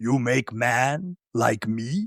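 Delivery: each word drawn out, pitched way down. Retelling a film scene where the monster speaks: imitating Frankenstein's monster. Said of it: "and he goes".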